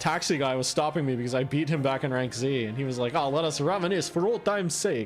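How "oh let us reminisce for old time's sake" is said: botched French accent sounding exaggerated, fake Transylvanian. Quoting a taxi driver he'd beaten earlier, in a put-on Transylvanian-sounding accent. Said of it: "I don't know why he sounds Transylvanian now. I tried. I, I can't do a French accent".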